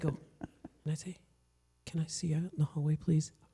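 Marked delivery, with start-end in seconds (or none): 1.9-3.3 lowered voice, quieter. A teacher retells calling a student out to the hallway, lowered voice. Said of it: "scarier if I lowered my voice".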